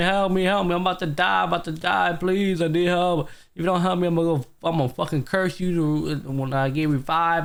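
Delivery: put-on high, half-voiced, held-back frantic screaming. Retelling a scene where a character begs others for help: imitating a character screaming. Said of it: "was literally screaming".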